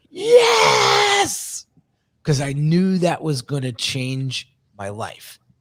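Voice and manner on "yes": mock, shrill, very high, top-of-the-lungs joyful scream. Retelling hanging up after the job offer and screaming: imitated joyful scream. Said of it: "I screamed at the top of my lungs".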